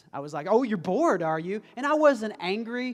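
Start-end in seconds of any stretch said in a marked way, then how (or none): 0.5-1.7 calm, unimpressed, knowing fatherly tone. Retelling a reply to a bored child: imitating own dad mode voice. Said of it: "I went into dad mode".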